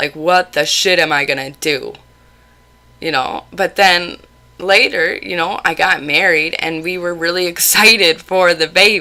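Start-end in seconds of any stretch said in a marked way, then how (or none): 0.2-1.9 put-on horrified tone. Recalling reacting to a pregnancy test in front of a roommate, retelling being horrified.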